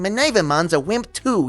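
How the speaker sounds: high, heavily laid-on New York accent. Showing the voice used at the audition for Bearmon: New Yorker accent. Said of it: "did this like New Yorker thing".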